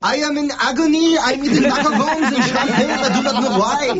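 put-on French accent, high-pitched.

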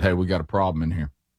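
usual speaking voice

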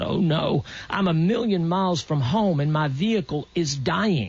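usual speaking voice

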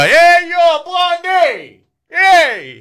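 put-on very high, very slow, swooping New York accent holler. Radio host explaining the band name, acting out a New York accent catcall. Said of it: "that's my best New York accent".

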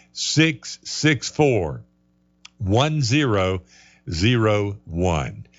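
very slow, careful, deliberate read-out. Reading out a phone number for listeners to write down: saying it slow. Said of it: "I'm saying it slow so everybody can get it".

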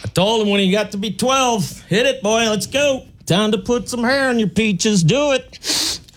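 up-north regular guy voice, pitched very high. Speaker performs a bit, then names it: up north guy impression. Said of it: "That's my impression of up north guy".

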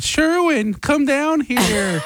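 slow, deliberate, drawn-out put-on voice. Retelling how the show opened: impersonating Bailey. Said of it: "That's your impersonation of Bailey".

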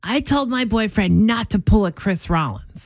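mock disgusted tone. Speaker retells what a man said to them off air, retelling a disgusted remark. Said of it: "like in this disgust tone".

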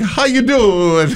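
very high-pitched, casual, easygoing tone. Imagining the Pope boarding a tour bus, imitating the Pope. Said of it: "Wrong voice".

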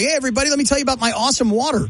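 radio ad announcer voice. Retelling a radio commercial heard while driving: imitating a radio commercial voice. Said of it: "a commercial comes on".

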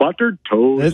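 dopey, lumbering delivery. Imitating a lumbering doofus character saying buttered toast: goofy doofus voice imitation. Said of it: "it always sounded kinda goofy".

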